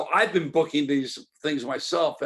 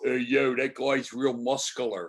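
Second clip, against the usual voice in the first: put-on Philadelphia gym-guy accent. Telling about a man in the gym remarking on another guy: imitating a philadelphia accent. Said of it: "the accent".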